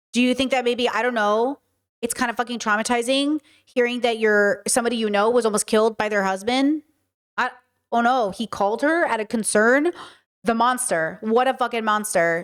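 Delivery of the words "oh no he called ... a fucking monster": usual speaking voice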